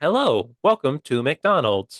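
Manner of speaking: machine-like automated drive-through speaker voice. Retelling a drive-through visit with his dad, robotic McDonald's drive-through voice. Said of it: "an automated voice like comes up".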